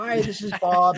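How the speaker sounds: very high, accountant-like voice. Retelling calling a guy back and reaching his voicemail, in Bob's accountant-like voicemail voice. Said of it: "It sounds like an accountant".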